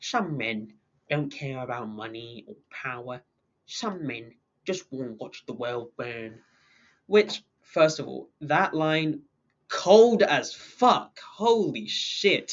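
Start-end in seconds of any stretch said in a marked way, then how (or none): 0.0-6.4 very quiet, low, hushed butler voice. Quote Alfred's line from Batman, trying your best Michael Caine impression. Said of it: "I'll try to do my best Michael Caine impression".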